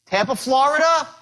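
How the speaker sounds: rising tone at the end of Florida. Demonstrating a sales-call micro agreement to listeners: rising voice at the end. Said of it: "When you raise your voice up like that".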